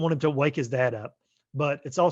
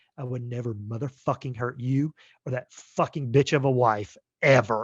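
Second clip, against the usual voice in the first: put-on, mock menacing delivery. Describing a creepy line delivery in a film, imitating a menacing delivery. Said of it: "the way he's saying it is like".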